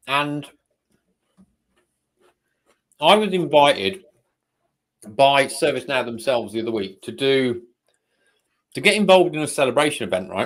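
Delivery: eating while talking. Telling another speaker about an invitation to an event, eating while talking. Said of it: "I'm still eating".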